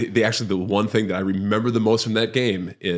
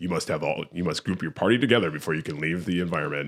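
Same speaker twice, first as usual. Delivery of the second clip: detached, soft, disembodied voice-of-God game narrator; 4 semitones lower, 5 dB quieter than usual. Speaker imitates a game's narrator telling players to group up; voice-of-God game narrator. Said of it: "this fucking voice of God".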